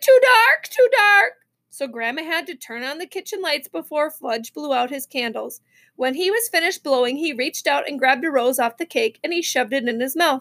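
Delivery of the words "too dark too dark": shrill, high, loud, slow, drawn-out wailing cry. Narrator reads a party guest's line as the birthday cake is set down, crying out. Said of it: "Sam cried".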